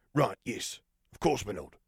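quick and hasty. Narrator reading a man agreeing with his lord, hasty agreement. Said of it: "he agreed hastily".

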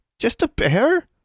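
squeaky, very high-pitched, echoing repeated words. Reading a story where a frightened girl repeats a line: high-pitched voice. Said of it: "Anna repeated in a high-pitched voice".

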